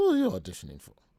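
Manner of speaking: terrible put-on woman's voice, belted very loudly. Retelling asking Wendy for a day off to audition, terrible Wendy impression. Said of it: "It's a terrible Wendy voice".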